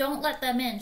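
pleading voice. After the doorbell rings, a woman speaks to the narrator, pleading. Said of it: "she pleaded".

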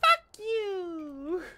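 put-on tiny, very high little girl voice, "you" drawn out. Speaker retelling a Twitter video of a little girl swearing: little girl voice. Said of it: "just like the most little girl voices".

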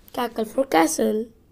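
ordinary delivery, nothing marked

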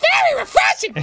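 squeaky character voice. Asked by another speaker to say the line in a Toad voice. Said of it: "Can you say very refreshing in a Toad voice?".

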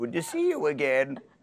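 put-on high elderly voice with no tongue control. Describing their grandparents, the speaker does an old person impression with a loose tongue. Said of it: "I do an impression of an old person, they have no control of their tongue".

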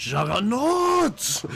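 very high shout, belted out. Picking a hero and imitating its voice line: imitating the Juggernaut hero shout. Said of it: "It's the real Juggernaut ulti".

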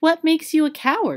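very high, amazed, full of wonder. Narrator reading a girl asking the lion why he is a coward, in wonder. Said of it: "looking at the great beast in wonder".

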